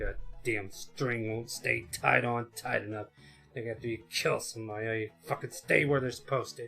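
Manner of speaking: grumbling aloud, complaining tone. Game master voicing a character who resecures a head, grumbling. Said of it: "he just grumbles like".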